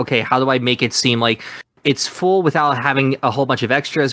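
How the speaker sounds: ordinary talk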